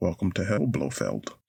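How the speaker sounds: very low, deep Scottish accent. Breaking off after announcing question number 2 for a very short Sean Connery impression. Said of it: "the shortest Sean Connery impression ever".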